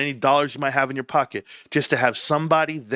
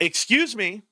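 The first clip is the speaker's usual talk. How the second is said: sassy, pitched-up voice full of attitude; 7 semitones higher than usual. Retelling a woman in the same line speaking to the speaker, imitating her attitude. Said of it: "with attitude".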